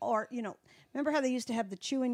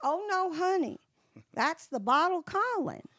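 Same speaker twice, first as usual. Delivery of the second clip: put-on talking like a little old lady; 8 semitones higher than usual. Retelling what a woman would always say back, imitating her way of talking. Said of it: "She talked like this".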